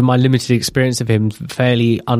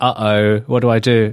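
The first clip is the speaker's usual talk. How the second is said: ordinary talk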